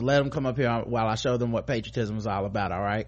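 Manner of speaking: usual speaking voice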